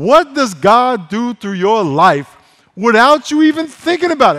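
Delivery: drawn-out, very loud voice. Repeating a question again for emphasis, saying it slow and loud. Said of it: "I'm going to say it slow, and I'm going to say it loud".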